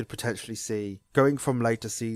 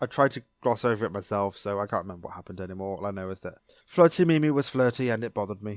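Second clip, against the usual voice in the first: ordinary talk, nothing marked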